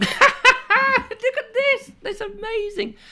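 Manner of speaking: acted very high, very slow voice with laughter throughout. Retelling opening a parcel: retelling own laughing reaction. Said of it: "it was more like".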